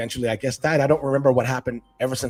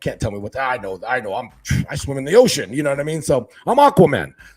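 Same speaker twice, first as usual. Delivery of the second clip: loud, cocky, boastful know-it-all bluster; 5 dB louder than usual. Retelling his old-school dad's reaction to advice about fish, imitating a boastful dad. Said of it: "my dad's like big ego, old school".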